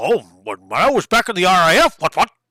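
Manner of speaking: put-on swooping old colonel voice. Predicting how a game character will talk to a player, in a Chicken Run chicken voice. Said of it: "talk like the, the chicken from Chicken Run".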